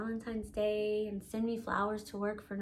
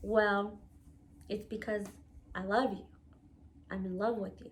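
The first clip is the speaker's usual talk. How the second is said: put-on quiet, hushed voice. Retelling how he answered after the argument: imitating quiet speech. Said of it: "he got real quiet".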